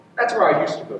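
calmed-down reply. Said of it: "he said more quietly".

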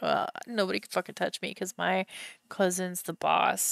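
mock, super smug, self-satisfied, cocky bragging tone. Voicing the boss's cousin, who nobody can touch: mock smug and conceited. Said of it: "super smug and conceited".

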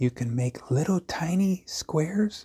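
soft, hushed whisper, barely voiced. Explaining shapes to viewers, whispering without knowing why. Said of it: "I don't know why I'm whispering".

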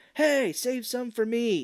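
mock very high-pitched, drawn-out yell. Retelling a movie scene where a turtle yells up: retelling a yell. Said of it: "yells up at him".

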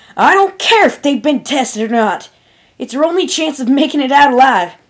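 sudden, high, loud yelled outburst. Applejack explodes at her friend in a room of ponies, yelling. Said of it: "the apple-bucking pony yelled".

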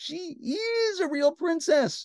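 slow, gasping voice. The queen, after the girl says she couldn't sleep, gasping. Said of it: "gasped the queen".

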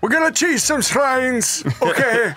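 put-on elderly man voice with Italian accent. Player addresses their in-game character, in an old italian man voice. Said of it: "I don't know why I talk like this, but I do, like an old Italian man".

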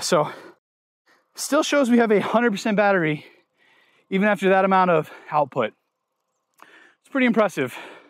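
winded, catching breath. After pedaling hard up a steep hill, checking the battery, out of breath. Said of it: "let me catch my breath for 1 second".

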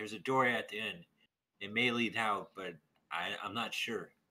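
loud shouting, calling out loudly. Voicing Vera in a game, calling back to the others: yelling back. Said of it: "yells back".

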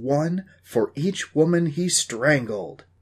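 drawn-out, theatrical, very slow dramatic delivery. Dusty turns the camera back on himself and speaks to it, dramatic voice. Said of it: "in his best dramatic voice".

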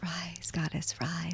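whisper, close and leaning in. Retelling words someone leaned in close and said: retelling a whisper. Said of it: "he whispers in my ear".

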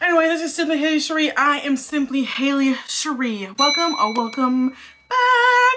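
winded, out-of-breath, breathless voice. Vlogger introducing themself at the start of a video, out of breath. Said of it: "I'm still out of breath".

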